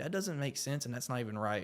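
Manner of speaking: ordinary delivery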